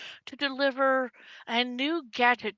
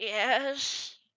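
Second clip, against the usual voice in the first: put-on elderly voice with stretched first word "yes". Voicing a figure answering through a stone: old voice. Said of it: "You hear this old voice go".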